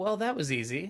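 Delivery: sarcastic mocking tone. Commenting after hitting an enemy for a hundred: sarcastic. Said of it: "He said sarcastically".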